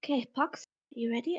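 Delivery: quiet, hushed, secretive whisper. Voicing a character readying a companion before a door: whispering quietly. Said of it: "I whisper quietly to him".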